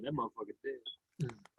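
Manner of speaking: very soft, very quiet, under-the-breath mutter. Retelling what a character said at a funeral: Nick Fury muttering under his breath. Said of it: "him, under his breath, he said".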